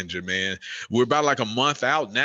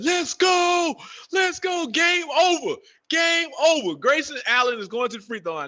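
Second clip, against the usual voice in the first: very high, put-on hyped yelling; 4 dB louder than usual. Retelling watching the game's last free throws at home: retelling own yelling. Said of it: "I'm literally yelling in my crib".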